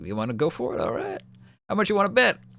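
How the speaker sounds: smooth, slick hustler elf voice, very high. A game master voices an elf at a pool table challenging a player, slick elf voice. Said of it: "there's a slick elf behind and he just goes".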